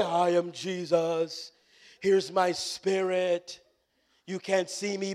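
very slow spooky ghost voice. Imitating Jesus introducing himself from above: spooky Holy Ghost voice as Jesus. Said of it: "hear my spooky Holy Ghost voice".

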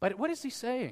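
ordinary delivery

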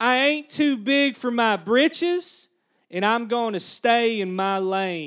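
spoken loudly in a Texan accent. Speaker reading a Texan translation of a Bible verse to an audience, Texan accent. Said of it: "the Texan translation of verse 1".

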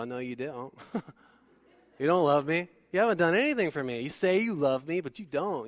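put-on sassy tone, full of attitude. Acting out a typical response to someone who says they love you: imitating a sassy Z-snap retort. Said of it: "get the Z snap or whatever".

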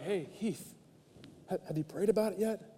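gentle-toned, soft, hushed half-whisper. Retelling how God nudges the speaker to pray: imitating God half-whispering. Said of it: "God kinda whispers like".

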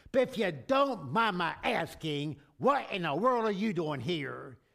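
put-on, pointed, sarcasm-laced delivery. Retelling a joke where a receptionist questions a man: sarcastic voice. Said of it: "with sarcasm on her face and in her voice".

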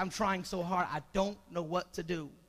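sobbing, tearful, crying delivery. Retelling how a young lady burst out crying when told: imitating someone crying. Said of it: "she just bust out crying".

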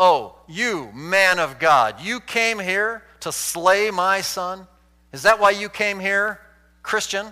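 put-on, cutting, bitter sarcasm. Explaining verse 18, acting out the woman's words to the man of God, mock-sarcastic. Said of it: "she uses it in a sarcastic manner".

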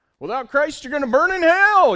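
very loud, shrill, high-pitched, angry preaching scream. Describing a man on a street corner with a Bible, imitating a street preacher screaming.

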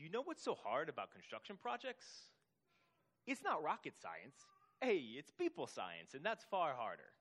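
put-on thick New York Italian accent. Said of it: "so I'm gonna try to do his accent".

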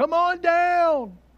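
high game show host call, "down" drawn out. Joking about a call to come down the tree: Bob Barker impression. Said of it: "doing his best Bob Barker impersonation".

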